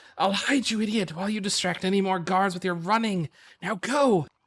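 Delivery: every word hissed out. Narrator voicing the elven's reply as he shakes himself free, hissing. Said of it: "he hisses".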